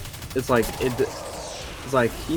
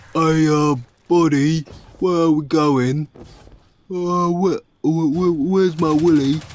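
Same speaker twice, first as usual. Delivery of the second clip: loud, dopey, dumb put-on British guy accent; 4 semitones higher, 6 dB louder than usual. Imitating a dumb british guy asking where they're going: dumb british guy voice. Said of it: "dumb British guy go".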